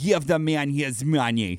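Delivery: over-the-top, cartoonish movie-style bad Russian accent. Defending a movie accent, quoting its one line in a cartoonish russian accent. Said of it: "that's a terrible accent".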